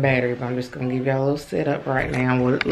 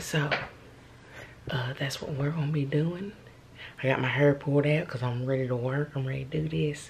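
hushed whisper, much quieter; 8 dB quieter than usual. Talking to viewers while assembling a desk beside a serious helper, whispering. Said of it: "I don't know why I'm whispering".

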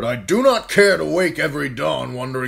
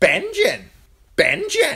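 very high, squawked raven call; 13 semitones higher than usual. Narrator reading a story, voicing the raven: squawking raven voice. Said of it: "The raven squawked".

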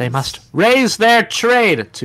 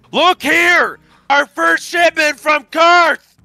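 screaming, shouting; 11 semitones higher than usual. Voicing a game character on cue after being told to scream: screaming. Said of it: "Time to scream".

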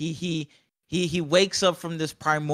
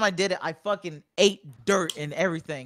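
plain

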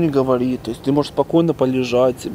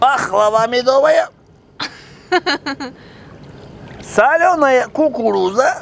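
very high, drawn-out hawker's cry; 11 semitones higher, 3 dB louder than usual. In the pool with Vasya, speaker imitates a vendor shouting while people sleep. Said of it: "Не кричи, котик, люди спят".

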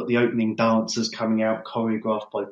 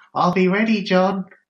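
put-on shrill, squeaky Australian accent, way up high; 9 semitones higher, 6 dB louder than usual. Retelling Bennett's answer to "I'll be back", do Bennett's very high-pitched Aussie accent. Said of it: "in a very high-pitched Aussie".

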